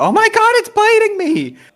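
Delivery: very high, loud pained shriek of pain. A player voices her character being bitten in a fight, screaming. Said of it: "while she's screaming".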